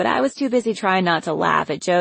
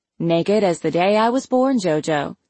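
plain

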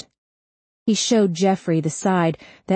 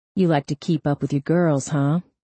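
plain reading voice

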